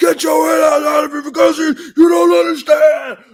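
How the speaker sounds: very high-pitched, loud screaming outburst. Retelling a man coming up screaming at him: imitating someone screaming out. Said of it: "a man comes up there screaming out".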